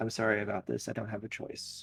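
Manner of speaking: whispering softly. Voicing a character who pins a player down and apologizes: soft whisper. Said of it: "bend down and whisper, uh, softly into your ear".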